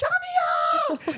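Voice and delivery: very high, shrill shouting. Retelling how she screamed her daughter's name down the aisle, retelling a loud scream. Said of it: "she's just screaming it out really loud".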